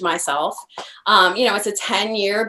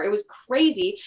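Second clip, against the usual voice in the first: plain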